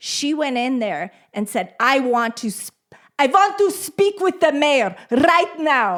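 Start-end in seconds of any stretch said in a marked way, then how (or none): 1.8-6.0 put-on Hungarian accent, higher and louder. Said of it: "in her Hungarian accent".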